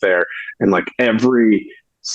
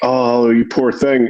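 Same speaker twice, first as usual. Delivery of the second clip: mock sympathetic voice, higher pitch; 3 semitones higher than usual. Retelling what she first said to the speaker: imitating a supportive tone. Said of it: "very supportive and very, like".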